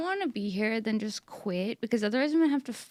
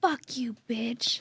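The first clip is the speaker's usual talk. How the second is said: put-on menacing, threatening bratty child voice. Retelling what a scary eight-year-old used to say: imitating a scary kid. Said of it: "Like that".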